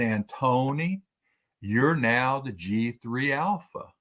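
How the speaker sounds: put-on Oklahoma accent, announcing tone. Retelling what the colonel said as the speaker walked in: Daryl Moore's Oklahoma accent. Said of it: "in his traditional prior Oklahoma accent that he has".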